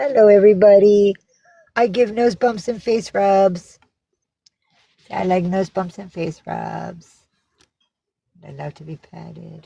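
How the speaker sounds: put-on cat voice. Voicing a cat greeting everybody: speaking as the cat. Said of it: "she says".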